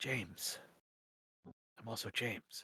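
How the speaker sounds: secretive, confiding, hushed, quiet conspiratorial aside. Voicing a guard who leans in close to the players: voice real low. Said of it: "gets his voice real low and says".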